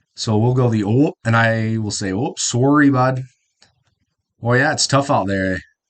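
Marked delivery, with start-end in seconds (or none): 2.2-5.6 Midwest accent with a Canadian-like sound. Showing how people from the Midwest talk: Midwest accent. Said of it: "Talk with more of a Canadian-esque, like, accent".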